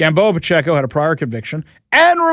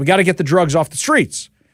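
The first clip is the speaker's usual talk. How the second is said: ordinary talk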